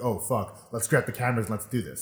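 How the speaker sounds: normal talking voice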